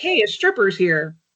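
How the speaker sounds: normal talking voice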